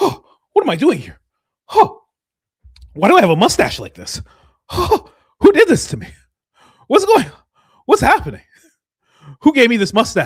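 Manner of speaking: play-acted, very loud, high, dazed, woozy, confused cries. Acting out a man whom substances are making woozy: imitating a woozy confused man. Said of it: "substances are making him woozy".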